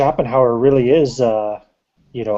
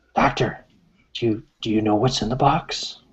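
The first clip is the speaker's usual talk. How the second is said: secretive, hushed whisper; 4 dB quieter than usual. Playing a sailor at the cell bars: whispering to the doctor. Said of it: "whisper to the".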